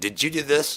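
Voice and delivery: really stern acted voice. Retelling what a bass player asked after a jam, imitating a really stern voice. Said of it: "Like in like really stern voice".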